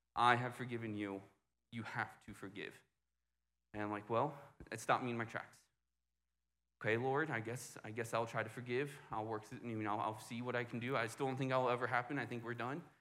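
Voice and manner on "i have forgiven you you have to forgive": mock, very stern, strict fatherly voice. Speaker retells what the Lord told them, in a put-on stern dad voice. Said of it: "I get this very stern".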